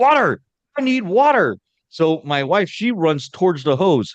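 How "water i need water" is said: very high, carrying shout. Retelling calling for water while covered in bees: imitating own yell. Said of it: "So then I yell out".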